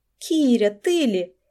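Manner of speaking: ordinary delivery, nothing marked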